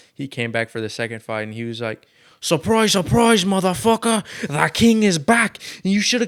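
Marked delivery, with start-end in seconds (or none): 2.4-6.3 poorly done, shrill, very high, very loud fighter voice. Retelling what a fighter said after coming back for the rematch: bad impression of the fighter. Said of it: "I suck at it".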